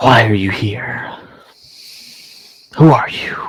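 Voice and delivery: sibilant, hissing, growling lizard man snarl. Narrating a scene, the speaker voices a lizard man questioning an intruder in a sibilant, growling lizard voice. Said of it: "In a terribly sibilant, growling voice, the lizard man cocks his head".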